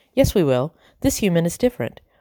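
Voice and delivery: ordinary talk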